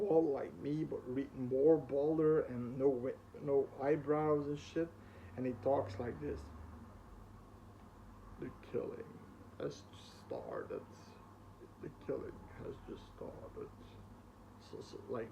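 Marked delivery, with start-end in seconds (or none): 8.4-13.7 eerie, hushed, creepy whispered demonic voice. Showing how a figure in a story talks, creepy voice. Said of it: "You know that creepy voice".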